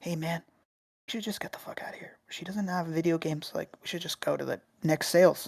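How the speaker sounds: hushed, urgent whisper. Retelling what he said to his friend at a garage sale: retelling a whisper. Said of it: "I swear to God I'm whispering it".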